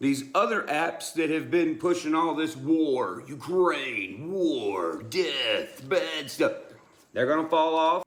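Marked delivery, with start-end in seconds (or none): 2.6-6.5 action-movie trailer narrator voiceover voice. Talking about apps, in an action movie voiceover voice. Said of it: "you do that that uh action movie voiceover really well".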